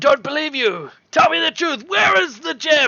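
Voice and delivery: shrill, very high, loud shouting. Game master voicing two Duergar confronting the players, shouting Duergar. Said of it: "these two Duergar shout".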